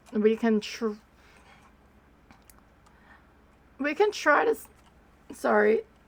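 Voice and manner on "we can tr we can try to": breaking voice, cracking mid-phrase. Saying they can try it, voice cracking. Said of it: "Voice crack".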